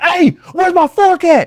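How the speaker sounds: high, slow, demanding yell.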